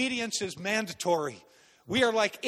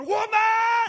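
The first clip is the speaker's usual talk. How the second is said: very high, shrill, drawn-out drill-sergeant yell, woman's voice; 12 semitones higher, 7 dB louder than usual. Recalling military training, the speaker acts out a drill sergeant: retelling a drill sergeant's yell. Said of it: "Yelling in your face".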